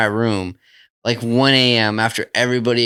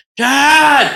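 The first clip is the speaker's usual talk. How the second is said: acted scream, higher and louder; 7 dB louder than usual. Retelling how someone ran downstairs calling for his dad: imitating someone screaming. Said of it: "started screaming out".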